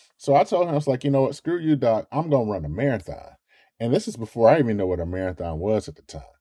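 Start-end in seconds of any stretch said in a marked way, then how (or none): 1.0-3.4 put-on flippant, tongue-in-cheek sarcasm. Retelling a reply to the doctor: retelling own sarcastic retort. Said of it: "trying to be sarcastic".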